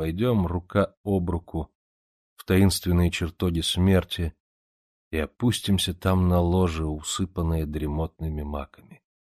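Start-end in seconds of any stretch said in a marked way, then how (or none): none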